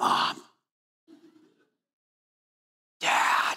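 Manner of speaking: put-on eerie, creepy, disturbing little-kid voice. Describing a small child hovering over the parents' bed at night, in a disturbing voice. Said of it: "in a disturbing voice they'll say".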